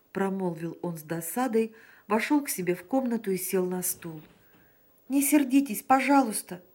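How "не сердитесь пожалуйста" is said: raised, earnest, begging, imploring pleading. Emil answers Sanin after being called a chatterbox, pleading. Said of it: "взмолился Эмиль".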